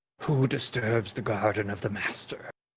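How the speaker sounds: deep, low, echoing, hushed guardian voice. Narrating a creature that steps into the room and surveys the group: echoing low voice. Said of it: "speaks in an echoing low voice".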